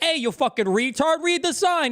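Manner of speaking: put-on insulting yell. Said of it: "And the guy's like".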